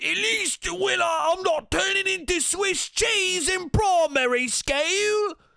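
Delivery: very high, put-on British accent. Retelling a TikTok meme about British people: imitating a British meme voice. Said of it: "TikTok videos of the donkey teeth going".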